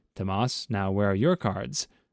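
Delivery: plain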